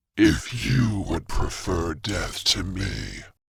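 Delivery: very low, deep, rough and raspy voice. Reading a story aloud, a possessed character answering: raspy, deep voice. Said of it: "he says in a raspy, deep voice not his own".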